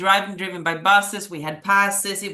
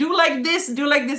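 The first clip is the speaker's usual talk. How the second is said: high, screamed, screaming voice; 8 semitones higher than usual. Retelling how her boyfriend, coaching her, screamed at her while she competed, retelling a scream. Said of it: "He was screaming".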